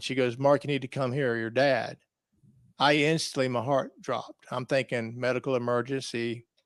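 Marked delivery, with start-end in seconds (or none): 0.4-2.0 imitated crying, tearful voice. Retelling a phone call from Mom: imitating someone crying. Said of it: "she was crying".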